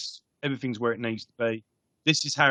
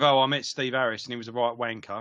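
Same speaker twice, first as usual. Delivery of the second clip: ordinary delivery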